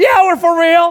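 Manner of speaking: very loud, very high-pitched shout. Retelling answering a young man across the street, retelling his own shout back. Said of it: "I shouted back".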